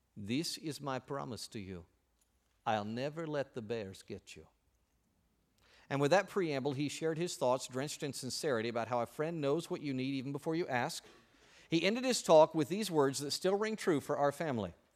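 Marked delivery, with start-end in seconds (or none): 0.1-4.4 put-on heavy Russian accent throughout, slow. Retelling what a man said to the children, in a heavy Russian accent. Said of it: "said in his heavy Russian accent".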